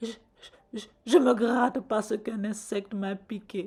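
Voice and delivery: trembling stammer through chattering teeth. Reading a tale: Sabonyuma answers the king of Guinea, teeth chattering. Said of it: "répondit Sabonyuma en claquant des dents".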